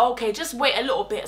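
ordinary delivery

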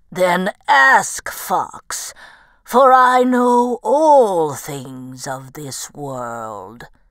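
put-on old, ancient woolly mammoth voice. Reading a story aloud, the old mammoth answers the fox, in an old woolly mammoth voice. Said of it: "he was astonished to see old [name], a fabulously hirsute woolly mammoth".

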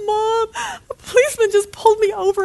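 mock very high, frantic, hysterical voice, near sobbing. A mother retells her daughter's panicked phone call, imitating someone hysterical. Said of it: "she calls me absolutely hysterical".

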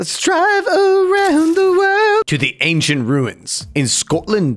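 very high, swooping, poorly done Scottish accent. Narrating a driving game, self-admittedly failing at an accent: bad Scottish accent. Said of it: "That was my sad attempt at a Scottish accent".

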